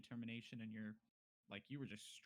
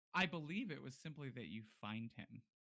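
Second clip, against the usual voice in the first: ordinary talk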